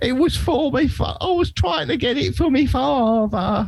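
very high, careful, slow character voice. Retelling a historical figure's excuse in his own words: accurate impression. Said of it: "Very accurate impression".

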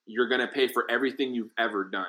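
ordinary delivery

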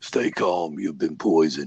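low, put-on American accent.

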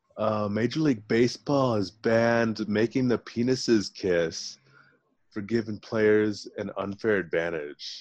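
full-on put-on surfer-dude accent. In an accent game, a player reads a fake headline in a surfer accent. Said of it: "your accent is surfer".

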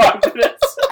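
high, slow words squeezed out through helpless laughter. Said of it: "I died laughing".

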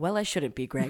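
low, quiet, devastated, holding back. Retelling a TV scene, acting out Tom's reply to Greg, mock-devastated and quiet. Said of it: "devastated, quietly goes".

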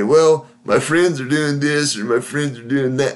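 grumbling, grumpy, spineless, wimpy man's voice. Giving advice to married men, voicing one type of husband: grumpy, wimpy voice. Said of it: "one grumpy, wimpy voice would say".

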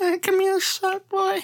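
mock creepy elderly male voice. Telling a story about an old man from his old mobile home park, doing a bad creepy old man impression. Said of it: "That's really horrible impression, but like that old creepy guy".

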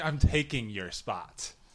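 confident, assertive, demanding tone. Showing how to claim a parking spot: confident demand. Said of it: "You gotta say it more confident".

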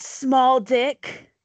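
sudden, abrupt yelling. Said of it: "she just yells".

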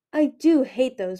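new voice, slow, exceedingly bored drawl. Replying while examining herself in the mirrors, in an exceedingly bored voice. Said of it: "Pearl said in a new, exceedingly bored voice".

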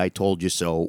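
ordinary talk, nothing marked

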